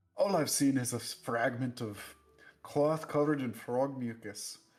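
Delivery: put-on sudden Scottish accent in a character voice. Voicing a character who describes a clue found: Scottish accent. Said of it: "why he's Scottish all of a sudden".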